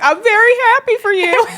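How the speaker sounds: mock teary, very high voice cracking. Retelling telling the couple in the hot tub: imitating own voice cracking while crying. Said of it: "My voice cracks".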